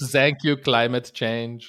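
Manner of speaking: awkward put-on French German Dutch accent. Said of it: "This is my awkward French, German, Dutch accent".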